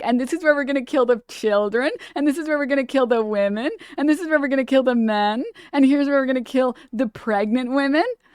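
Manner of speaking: giddy, gleeful, thrilled and proudly showing off. Imitating Ben-Gvir showing off the death chambers: imitating Ben-Gvir giddy. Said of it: "how giddy he was".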